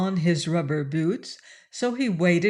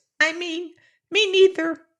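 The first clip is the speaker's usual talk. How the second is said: very high-pitched, tiny little mouse voice; 11 semitones higher than usual. Reading a story aloud, voicing the mouse in a tiny little voice. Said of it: "said a tiny little voice".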